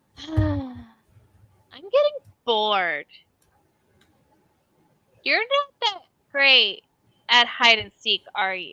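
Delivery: put-on small child voice, swooping and sing-song. The narrator voices a child heard as a player reaches for a door: child's voice. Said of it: "you hear the child's voice go".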